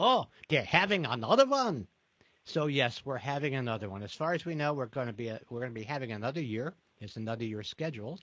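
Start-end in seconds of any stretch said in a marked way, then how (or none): 0.0-1.9 wisecracking raised voice with put-on Yiddish accent. Retelling a fellow teacher's reply on the street, the speaker uses a Yiddish accent. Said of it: "in his best Yiddish accent".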